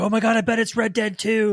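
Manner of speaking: shrill, frantic, very high excited screaming. Retelling how a voice actor's son guessed the game: imitating someone screaming. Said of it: "he started screaming".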